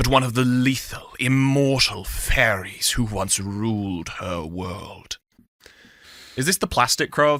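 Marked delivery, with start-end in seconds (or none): 0.0-5.2 put-on seductive, low, sultry, very slow voice. Reading a book blurb aloud to the others, in a mock sexy voice. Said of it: "not sexy enough. Hold up".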